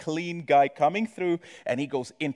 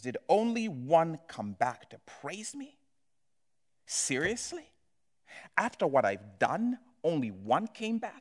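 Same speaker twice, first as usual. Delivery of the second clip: play-acted disappointed, wounded, incredulous tone; 2 semitones higher, 5 dB quieter than usual. Speaker retelling a gospel story, voicing Jesus's disappointment. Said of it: "you can hear the disappointment".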